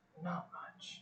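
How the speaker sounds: very quiet, breathy, hushed whisper. Answering a question in character in a scene: whispering. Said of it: "I was at a whisper".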